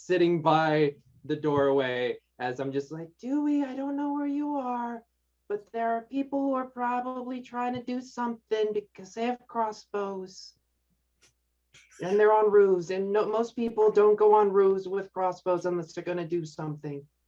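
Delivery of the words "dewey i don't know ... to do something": put-on voice of an 8-year-old boy. In a tabletop game, a player's character speaks from a doorway: 8-year-old boy voice. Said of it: "I will put on my best 8-year-old boy".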